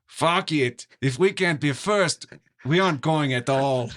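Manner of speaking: put-on Russian accent. Playing a leader scrapping the space program despite a pleading comrade, in a put-on accent. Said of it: "you said it with a better accent than I".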